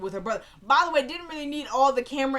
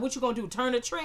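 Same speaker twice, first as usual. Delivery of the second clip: plain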